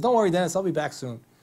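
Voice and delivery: chuckling, laughing through the words. Retelling a friend's phone call about a transplant: imitating Rod laughing while talking. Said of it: "And he's laughing".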